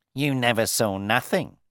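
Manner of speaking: bragging, proud, boastful, pleased with himself. Reading a story: a man answers the narrator's question, proudly. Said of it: "he said proudly".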